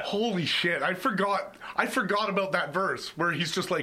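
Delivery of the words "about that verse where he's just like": normal talking voice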